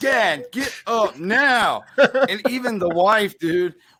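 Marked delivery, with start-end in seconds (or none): 0.0-1.8 put-on embarrassed, mortified kids' voices, very drawn out and slow. Dad retells his fall, quoting his kids urging him up, imitating embarrassed kids. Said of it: "my kids were so embarrassed".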